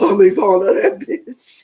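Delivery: demonic, possessed-sounding voice. Recapping who was there, imitating how Ivana talks: demon-possessed voice. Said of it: "she always sounds like some demon possessed".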